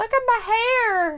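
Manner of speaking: high, slow, vain preening voice. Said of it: "He's like".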